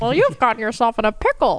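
high, squeaky little cartoon mouse voice. Imagining a loudspeaker in Mickey jail, doing a Mickey Mouse voice. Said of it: "that was a pretty good Mickey voice".

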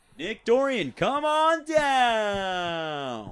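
very high, loud, showy game show announcer voice. Doing the voice his restaurant regulars ask for, game show announcer voice. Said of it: "my cool announcer voice or like my game show voice".

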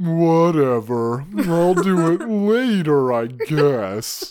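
very slow, dragged-out drawl, mopey and brooding. Speaker acts out Angel's reply when interrupted while brooding: Angel voice. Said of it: "That's our Angel voice".

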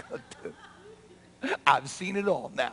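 very slow, drawn-out, amused, laughing delivery. Retelling a man lowered through the roof: imitating Jesus laughing. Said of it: "I think Jesus starts laughing".

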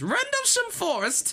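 exaggerated mock British accent. Saying a British-sounding forest name in an exaggerated mock British accent. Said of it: "I should not try to mock the British accent".

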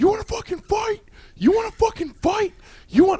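put-on, very high-pitched, threatening shout. Telling a story, the speaker acts out a big guy shouting at everybody. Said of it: "he's shouting at everybody like".

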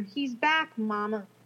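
mock words broken by sobs, tearful. Retelling what a frightened daughter said in bed: imitating sobbing speech. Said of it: "through sobs".

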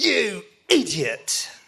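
harsh, hostile, aggressive scolding tone, put-on. Retelling the voice that scolded them after a spill, imitating an aggressive scold. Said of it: "with that aggression".

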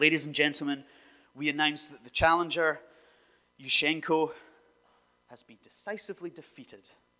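very loud, booming put-on Ukrainian announcer accent, approximate. Quoting a state TV announcement in Ukraine, in an inexact put-on accent. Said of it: "not quite in that accent".

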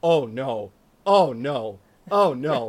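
very slow, loud, drawn-out, aghast, horrified dismay. Retelling the barber's reaction to a home haircut: imitating a horrified barber. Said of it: "as bad as if I'd presented him with a dead child".

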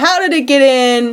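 put-on shouting like a crowd. Narrating a story about the king's disappearance, imitating the people shouting. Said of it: "the people shout".

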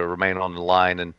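ordinary talk

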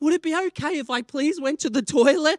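mock sweetly courteous, polite voice. Retelling a scene in a line, the speaker quotes Jess asking a lady; imitating Jess asking sweetly. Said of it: "sweetly, politely asking".

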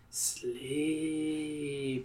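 very soft, soothing, hushed, drawn-out coo. Narrator reads the Countess leaning toward the listener, cooing. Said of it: "she coos".

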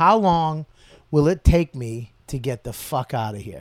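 ordinary talk

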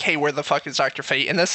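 plain

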